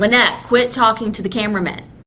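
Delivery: normal talking voice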